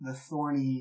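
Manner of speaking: ordinary delivery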